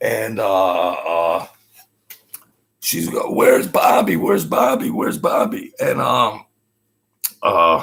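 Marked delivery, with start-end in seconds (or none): 3.3-5.7 unhinged, rough, frantic woman's voice, words repeated. Retelling how the captain's wife screamed at the speaker: retelling a woman screaming. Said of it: "She's screaming at me".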